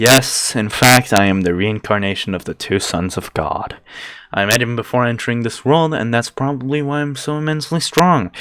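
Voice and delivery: ordinary talk, nothing marked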